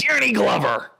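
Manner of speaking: shrill, very loud, high, blurted yell. Retelling the moment of standing up at a guess: retelling a yell. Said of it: "I stand up and I yell".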